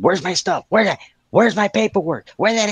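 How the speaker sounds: very high-pitched, shrill, screamed yelling. Retelling foreigners at immigration asking for their stuff: imitating people screaming and yelling. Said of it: "they're screaming and yelling".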